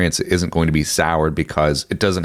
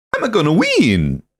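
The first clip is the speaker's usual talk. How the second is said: put-on Italian-accented voice, higher; 11 semitones higher than usual. Imitating how Mario was voiced in old nineties shows: Mario voice. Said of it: "It was Mario. It was like".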